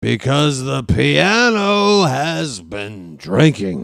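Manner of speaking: very slow, stretched-out delivery, piano drawn out. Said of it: "if you want me to talk like [name]".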